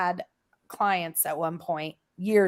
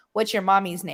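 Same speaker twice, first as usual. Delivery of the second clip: plain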